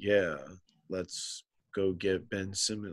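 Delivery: flat, deadpan, sarcastic fake enthusiasm. Questioning why the team would want a player, with sarcastic flat enthusiasm. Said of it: "that would be the level of enthusiasm I would have".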